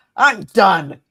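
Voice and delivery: booming, very loud, fed-up, out-of-patience exasperated outburst. Imitating a politician's out-of-patience attitude: imitating exasperation. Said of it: "her exasperation and her "I'm out of fucks" attitude".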